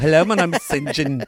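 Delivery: spot-on put-on Australian accent. Imitating someone introducing himself: Australian accent imitating St. John. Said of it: "It sounds just like him".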